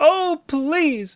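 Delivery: very high, sad, desperate begging tone. Demonstrating how to make a simple request sound: sad, desperate plea. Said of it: "very sad and desperate".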